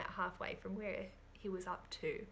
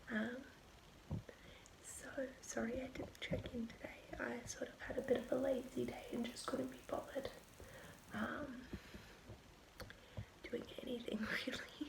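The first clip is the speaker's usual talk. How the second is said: hushed whisper, much quieter; 4 semitones higher, 4 dB quieter than usual. Recording a late check-in while everyone is in bed, whispering. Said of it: "I'm just whispering because everyone's in bed".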